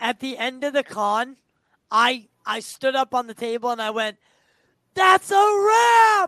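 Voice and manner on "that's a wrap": very loud, high yell, "wrap" drawn out. Retelling standing on a table at the end of a con: imitating own loud yell. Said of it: "I yelled it as loud as I could".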